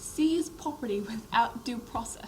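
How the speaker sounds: very high put-on British accent. Asked to say a phrase again, the speaker uses a British accent. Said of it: "Say in British accent".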